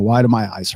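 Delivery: ordinary delivery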